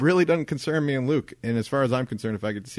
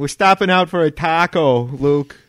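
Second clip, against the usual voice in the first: put-on very loud, high, drawn-out, strange accentuated voice; 5 semitones higher, 8 dB louder than usual. Retelling what the wife said on the phone: imitating the wife's odd voice. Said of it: "What voice is that that she was doing?".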